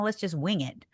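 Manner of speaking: ordinary talk, nothing marked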